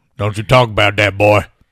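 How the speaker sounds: booming, belted-out put-on character voice. Doing a Sling Blade impression with the other speaker: Carl from Sling Blade voice. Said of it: "the Sling Blade im-, impression".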